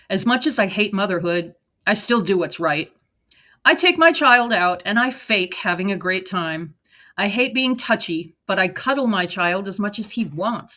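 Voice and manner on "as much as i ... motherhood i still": ordinary delivery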